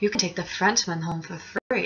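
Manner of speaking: close, hushed, secretive half-whisper. Retelling what a man who took a picture with her said, half-whispering in her ear. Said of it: "he's like whispering in my ear".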